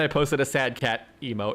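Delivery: ordinary talk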